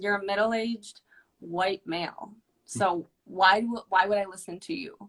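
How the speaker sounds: defiant, dismissive, attitude-laden tone. Retelling own first words to a counselor: imitating own past attitude. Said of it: "I walked in with an attitude".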